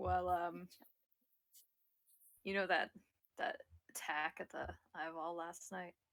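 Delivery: voice brought right down, low and hushed. With guards at a table nearby, a player's character asks someone something in a lowered voice. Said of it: "I'll kind of lower my voice".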